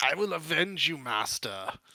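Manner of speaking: rasping tone. Voicing an enemy who vows to avenge his master: raspy voice. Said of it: "like a sort of, like, raspy tone to his voice".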